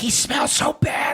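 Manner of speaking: high, very slow, drawn-out stage whisper. Retelling what a girlfriend said about a seatmate on a flight: imitating a whisper.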